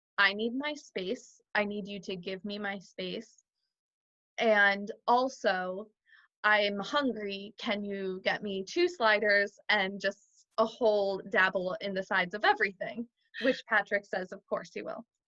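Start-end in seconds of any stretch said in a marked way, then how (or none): none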